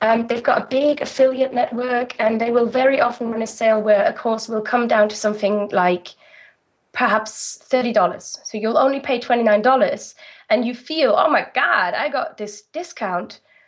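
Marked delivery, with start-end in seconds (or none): 11.2-13.4 put-on American accent. Describing a buyer's reaction to a discounted course: american accent. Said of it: "in an American accent".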